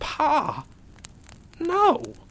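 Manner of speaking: hushed, quiet, very high-pitched cry. Narrator reads a son just hit by bullets calling to his father, said quietly. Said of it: "he said quietly".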